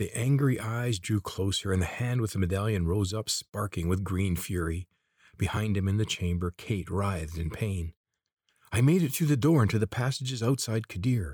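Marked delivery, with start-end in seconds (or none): 8.7-11.4 sudden, high blurt, words bursting out all at once. Corvin, as the figure with the medallion advances, is blurting out. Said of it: "Corvin blurted out".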